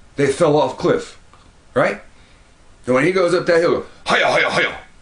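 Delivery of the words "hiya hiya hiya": high, loud, rattled-off herder's call. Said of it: "Don't even sound like a Caucasian".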